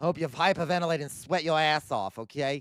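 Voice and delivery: put-on Boston accent. Speaker repeats the same rude wish, this time in a Boston accent. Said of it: "in a Boston accent".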